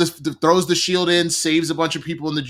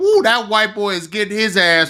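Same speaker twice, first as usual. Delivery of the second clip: put-on pitched-up old-timer voice; 5 semitones higher than usual. Acting out how the old man would react to the fight: imitating the old man. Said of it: "The old man would have been like".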